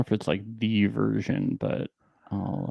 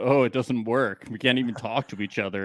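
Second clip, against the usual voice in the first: plain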